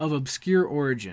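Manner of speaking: ordinary talk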